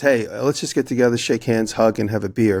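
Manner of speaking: ordinary talk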